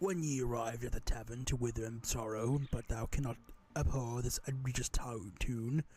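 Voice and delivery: put-on English accent, pitched low. The speaker performs a line in an English accent. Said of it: "in an English accent".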